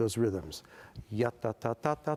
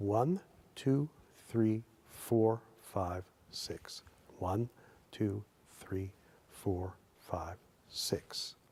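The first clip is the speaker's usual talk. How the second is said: slow, deliberate, carefully drawn-out delivery; 3 semitones lower, 4 dB quieter than usual. Counting beats of a six pattern again: counting a little slower. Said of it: "I'll do it a little slower for you".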